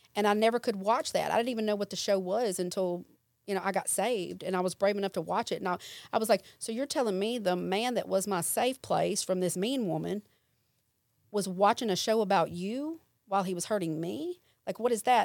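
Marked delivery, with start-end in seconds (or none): none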